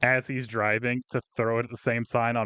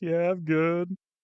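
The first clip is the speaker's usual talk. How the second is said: mock, high voice straining to hold back tears; 6 semitones higher than usual. Retelling answering after a painful fall: imitating holding back tears. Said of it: "holding back tears 'cause I was in so much pain".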